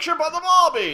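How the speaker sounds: high, loud mix of Australian and European accents. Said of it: "you wind up with something like".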